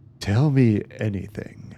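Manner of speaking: sultry southern drawl. Quoting a video game hero's usual line, in a sultry southern Gabriel Knight voice. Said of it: "in that sultry southern voice".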